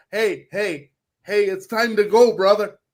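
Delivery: mocking, derisive put-on voice. Mocking the analytics guys up in the booth: mocking imitation of a booth analytics guy. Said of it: "analytic motherfuckers, up there in the booth going".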